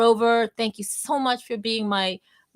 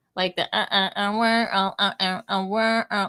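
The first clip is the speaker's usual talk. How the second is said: imitated garbled, robotic, broken-up voice. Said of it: "He sounded like this".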